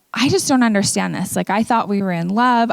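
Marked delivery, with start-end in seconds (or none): none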